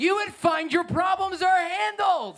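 shrill, very high, fervent, passionate yelling. A speaker urges listeners to worship, yelling. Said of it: "Why am I yelling?".

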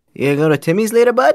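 very high, put-on Canadian accent. Asked whether they can do a Canadian accent, demonstrating one: Canadian accent. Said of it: "can you do a Canadian accent?".

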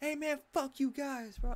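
put-on very high, hostile, angry cursing. Retelling what a man shouted across the job-site gate: mock angry trash talk. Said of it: "talking mad shit".

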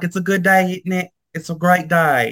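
high, put-on, fake British accent. Speaker retells greeting people at work, in a fake British accent. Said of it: "talking like I'm British".

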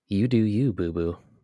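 put-on southern drawl. Quoting what a man at the bar said, with a southern drawl. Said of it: "But again, with the southern draw".

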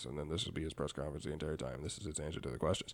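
very low, hushed press-conference voice. Show how a mad coach talks through his press conference, in a Bill Belichick press-conference voice. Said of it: "He's just kind of talk like this".

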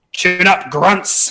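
high shout in a character voice. Stepping into a clearing as a Hobgoblin war chief: shouting in Hobgoblin. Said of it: "step into the clearing and shout in Hobgoblin".

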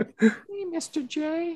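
very high, squeaky cartoon voice. Speaker shows the duck voice they usually do: Harley Quinn voice. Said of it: "when I do my duck voice".

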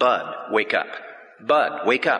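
slow, tender, loving yet firm and commanding tone. Retelling a voice heard after falling asleep at the wheel: imitating a loving yet firm, commanding voice. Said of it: "in the most loving and yet firm, very commanding way".

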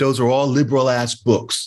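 put-on blunt delivery in New York accent. Retelling what a woman said on seeing five books, imitating her accent. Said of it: "In that accent".

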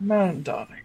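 smooth, easy, relaxed character voice. Imitating a character's greeting: smooth Silas voice. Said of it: "Silas was much more like".

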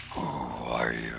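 very low, deep, rolling rumble. Narrating a tabletop game, voicing an unseen speaker in a low deep rumbling voice. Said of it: "a low and deep voice that kind of rumbles out".

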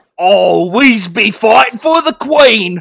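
very loud, broad, exaggerated working-class London accent. Doing an impression of a British World War soldier, most peasant London accent ever. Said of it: "like the most peasant. London accent ever".

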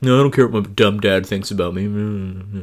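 dismissive, brushing-off tone, final me drawn out. Discussing the story with a co-host, acting out Percy's reply, Percy Jackson impression. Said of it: "It's my Percy Jackson impression".

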